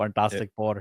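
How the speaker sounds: put-on Indian accent. Naming the movie they just came back from, in an Apu accent. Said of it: "tried my very best uh, Apu accent".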